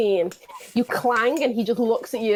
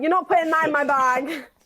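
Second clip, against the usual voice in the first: high-pitched voice called out from a distance; 5 semitones higher than usual. Game narrator voicing a party member objecting from the doorway, Lilith shouting from the doorway. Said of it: "Lilith just shouts from out the doorway".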